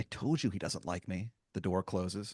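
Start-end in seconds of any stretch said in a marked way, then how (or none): 0.0-1.3 low, muttered under the breath. Voicing a departing character speaking to Clint: muttering under his breath. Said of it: "say to Clint under his breath".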